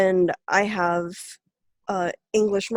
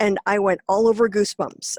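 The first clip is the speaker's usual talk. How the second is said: usual speaking voice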